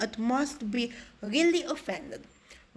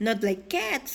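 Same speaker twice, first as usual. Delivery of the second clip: impassioned, heartfelt, passionate outcry. A narrator reads the mouse's reply to Alice, in a shrill, passionate cry. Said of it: "cried the mouse in a shrill, passionate voice".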